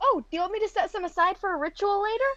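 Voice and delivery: speaking with mouth full. Playing Vicky in the scene, she speaks while talking with mouth half full. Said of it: "with her mouth like half full".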